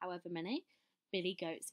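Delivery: ordinary delivery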